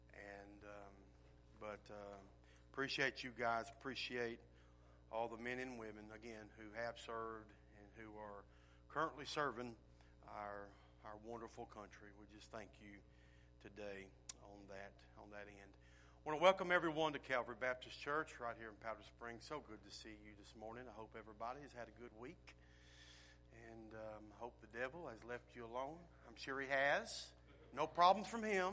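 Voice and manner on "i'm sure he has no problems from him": sarcastic, pitched up and louder. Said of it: "I say that sarcastically".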